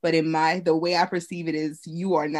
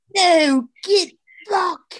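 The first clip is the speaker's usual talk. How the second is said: mock-angry mob voice, much higher, louder; 13 semitones higher, 6 dB louder than usual. Telling how people turned on them, the speaker uses a put-on angry mob voice. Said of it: "That's how my angry mob voice".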